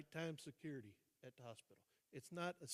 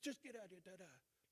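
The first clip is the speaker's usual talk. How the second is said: mock irritated, angry, pitched-up swearing; 5 semitones higher, 4 dB quieter than usual. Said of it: "She's smoking and cussing and this".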